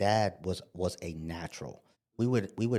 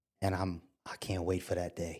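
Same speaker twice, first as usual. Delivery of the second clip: put-on choked-up speech; 3 dB quieter than usual. Retelling a father's words about the son's future, imitating someone choked up. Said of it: "And he would get choked up".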